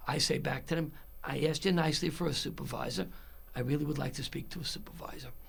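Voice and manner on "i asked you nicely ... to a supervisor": soft, calm, hushed voice. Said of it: "in a very calm voice".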